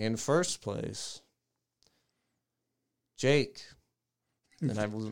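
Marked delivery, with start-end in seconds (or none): 0.0-3.6 slow, very somber, acted grave and solemn delivery. Retelling the teacher announcing first place: imitating a very somber tone. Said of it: "she said in this very somber tone".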